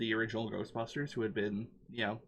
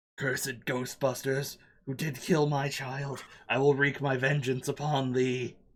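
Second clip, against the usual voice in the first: giant demon voice, louder; 3 semitones higher, 4 dB louder than usual. Answering a Ghostbuster's challenge as the giant demon: voicing the giant demon. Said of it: "I point it at the giant demon".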